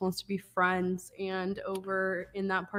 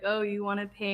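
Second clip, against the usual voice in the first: plain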